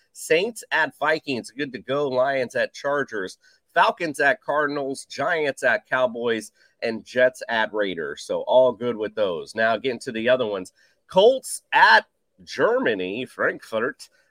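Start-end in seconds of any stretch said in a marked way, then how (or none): 11.0-14.0 bad, hammy, horrible German accent. Reading out game locations in a weather report: horrible German accent. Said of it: "that was a horrible German accent".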